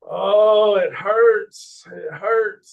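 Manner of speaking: slow, loud pained moan. Retelling how an injured friend cried out on the way down: imitating someone moaning in pain. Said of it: "he was screaming and moaning".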